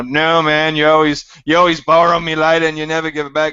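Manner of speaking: put-on loud, broad Australian bogan accent. Acting out a cartoon Bogan's friend refusing a lighter: Australian accent. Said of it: "That is the best Australian accent I have ever heard".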